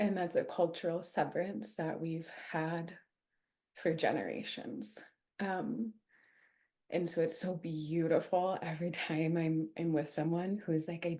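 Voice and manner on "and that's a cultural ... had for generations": voice welling with tears, near crying. Asked how she came to offer pelvic care, the speaker answers while tearing up. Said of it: "I'm like tearing up actually".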